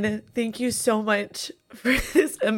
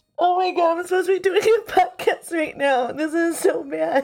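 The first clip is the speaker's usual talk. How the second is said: tearful crying through the words, pitched high; 6 semitones higher than usual. Talking on a podcast that is being recorded right now: crying. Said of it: "I can't stop crying".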